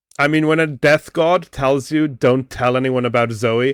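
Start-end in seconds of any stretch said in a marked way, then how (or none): none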